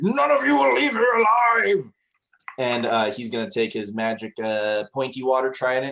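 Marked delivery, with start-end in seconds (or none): 0.0-1.9 furious genie voice, higher and louder. Voicing a genie who was just insulted and now attacks: enraged genie. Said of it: "you see a fire in his eye".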